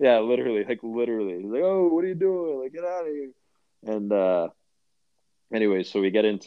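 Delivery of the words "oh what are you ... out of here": put-on yelling, much higher pitch. Recounting how a man yelled at another guy, retelling his yelling. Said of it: "he's like yelling at the guy".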